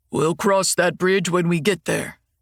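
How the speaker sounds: mocking in a gruff tone. Quoting what her husband says, in a gruff mocking voice. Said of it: "in a gruff voice like she's mocking me".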